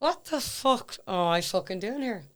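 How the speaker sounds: speaking through clenched teeth. Retelling what they kept saying beside Kimberly, retelling words said through teeth. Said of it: "I just kept saying that through my teeth".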